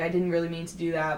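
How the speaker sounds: ordinary talk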